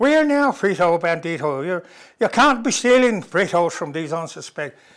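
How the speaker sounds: soothing Irish policeman brogue. Speaker recalls a Frito Bandito commercial, doing the calm Irish cop voice. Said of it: "calming voice, Irish cop".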